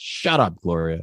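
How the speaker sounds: punchy, cutting, forceful delivery. Quoting a movie scene's line again: imitating Kevin saying shut up. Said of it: "the way he says it is such, like, a great sound".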